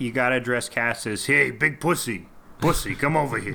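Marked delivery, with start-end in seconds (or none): 1.3-3.6 spoken with a New Jersey accent. Showing how you have to address someone, in a Jersey accent. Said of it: "That's how you have to do it in a Jersey accent".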